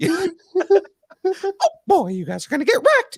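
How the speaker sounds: put-on cartoon mouse voice. Showing the others the voice a friend loves: Mickey Mouse voice. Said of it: "I do the Mickey voice".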